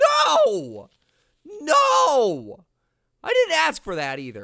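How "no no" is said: very high, swooping, screamed "no". Gamer reacting to something going wrong in the game, screaming no.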